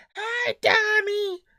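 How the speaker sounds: very high, loud, nasally, grating voice. Recalling a woman who always called the speaker Donnie, imitating her nasal high-pitched voice. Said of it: "very kind of nasally, uh, high pitched kind of voice".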